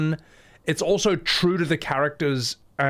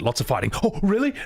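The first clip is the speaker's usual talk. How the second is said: high, eager, excited puppy-like voice; 5 semitones higher than usual. Describing the french dub of a character, mock-excited dog-like voice. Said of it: "he sort of sounds like an excited dog".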